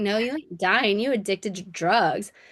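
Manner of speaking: ordinary talk, nothing marked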